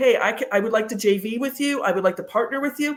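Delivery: normal talking voice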